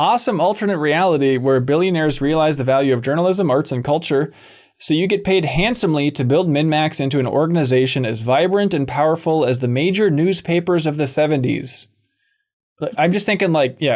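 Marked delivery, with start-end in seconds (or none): none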